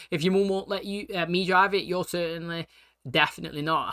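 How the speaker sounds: ordinary talk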